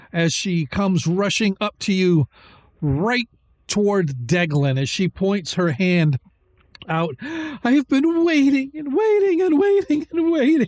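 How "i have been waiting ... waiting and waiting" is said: very high, sobbing through laughter. Voicing a tearful young woman pointing at Deglin: crying and laughing at once. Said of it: "She's crying and laughing at the same time".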